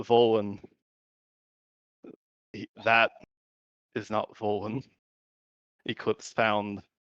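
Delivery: half-whisper pitched as low as possible, hushed. A player character leaning in to speak to Saros, in a low half-whisper. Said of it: "as like low in a whisper as I can".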